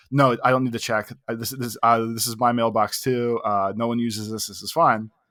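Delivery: normal talking voice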